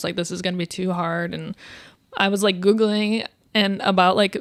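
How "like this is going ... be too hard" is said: usual speaking voice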